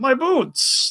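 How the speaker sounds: put-on fussy, prim, prissy voice, very high. Quoting a knight's line from a scene, prissy knight line. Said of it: "the real prissy line from the knight".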